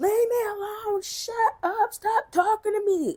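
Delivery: put-on furious child voice, high-pitched, shrill, screaming. A parent retelling the youngest son yelling at his brother during a game: imitating a child screaming. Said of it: "my youngest just screaming, yelling".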